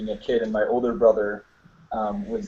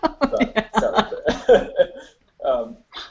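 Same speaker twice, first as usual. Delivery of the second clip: laughing through words, swooping and slow; 12 semitones higher, 4 dB louder than usual. Introducing yourself while reacting to the chat box: laughing while talking. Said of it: "I'm laughing 'cause everyone in the chat box".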